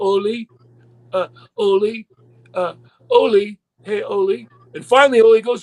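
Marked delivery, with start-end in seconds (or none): 0.0-4.5 slow, halting, hesitant calling out. Retelling a dressing-room scene, the speaker acts out Knobs interrupting Ole: imitating Knobs calling hesitantly. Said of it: "raises his hand, going".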